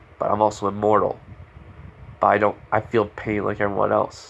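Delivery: ordinary talk, nothing marked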